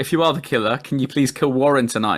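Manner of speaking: ordinary talk, nothing marked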